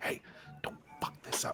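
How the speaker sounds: quiet, hushed whispering. A player, in character, warns a fellow party member in hushed tones. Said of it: "we're doing this in like hushed tones".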